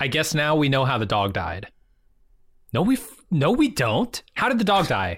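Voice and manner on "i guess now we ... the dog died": normal talking voice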